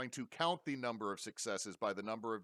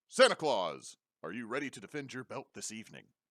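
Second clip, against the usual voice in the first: wrestling ring announcer voice, calling into the mic; 7 dB louder than usual. Voicing a wrestling announcer asking santa about his belt: announcer voice. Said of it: "the announcer holds a microphone up ... and goes".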